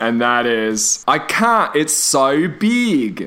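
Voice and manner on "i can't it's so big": Australian accent, very slow and drawn out. Quoting the sentence heard most while in Australia, in an Australian accent. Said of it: "I did learn to say one thing in an Australian accent".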